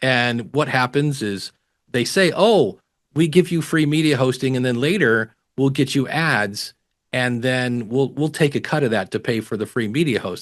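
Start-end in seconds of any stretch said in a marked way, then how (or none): none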